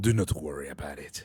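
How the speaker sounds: voice dropped very low and soft. Answering a compliment on their voice, setting a mood: lowered voice. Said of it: "Let me lower it a little bit".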